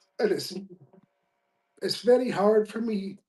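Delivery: voice catching, choked-up and tearful, close to tears. Speaking about people his work has helped, in tears. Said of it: "Second time we get him in tears".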